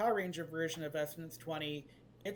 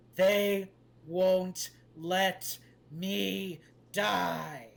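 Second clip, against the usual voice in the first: very slow, loud, ape-like beast growl; 6 dB louder than usual. A game master voices an ape confronting the players, growling ape voice. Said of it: "he growls out the phrase".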